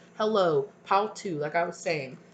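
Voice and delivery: ordinary talk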